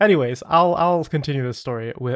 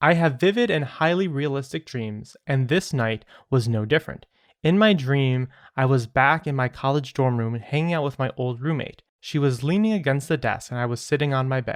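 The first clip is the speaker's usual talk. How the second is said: usual speaking voice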